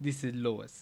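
put-on Russian accent. Asked to do a russian guy's accent, trying a line: russian accent. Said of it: "I want that a Russian guy. Accent".

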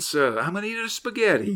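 over-the-top New York accent with swooping pitch. Describing a Nativity play where everybody speaks in a crazy New York accent. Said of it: "like a crazy New York accent".

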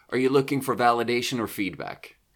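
acted, offhand, dismissive, completely matter-of-fact delivery. Retelling how a middle manager answered while eating: imitating a dismissive matter-of-fact manager. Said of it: "in this really dismissive, ... completely matter-of-fact way".

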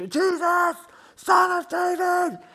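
play-acted very high, very slow, drawn-out shouting. Retelling a crowd scene where someone calls out over the noise: imitating someone shouting. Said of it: "He just won't shut up as he just keeps".

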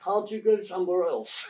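put-on thoroughly English voice, very English accent. Retelling an airport's radio reply to a pilot: very English voice. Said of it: "a very English voice apparently came back".

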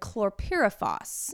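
chlorpyrifos said really slowly.

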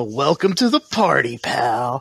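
slow, theatrical, dramatic action-movie style delivery. Cracking knuckles as a character on a rooftop, then delivering with a dramatic delivery. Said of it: "I dramatically crack my knuckles and go".

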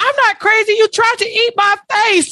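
mock, shrill, very high-pitched yelling. Act out Kelly's reply after being called a crazy person, imitating someone yelling. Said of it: "And Kelly yells".

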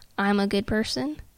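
ordinary talk

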